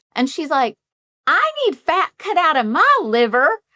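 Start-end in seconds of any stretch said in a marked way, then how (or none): 1.3-3.5 put-on Southern accent, pitched very high. Retelling a first phone call from a tennessee woman, imitating a southern accent. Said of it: "she has a Southern accent".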